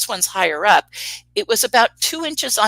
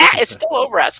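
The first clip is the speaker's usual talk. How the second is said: play-acted frantic, freaked-out panic, high and loud; 7 semitones higher, 5 dB louder than usual. Retelling how a woman reacted while her husband watched, imitating someone freaking out. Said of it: "She's totally freaking out".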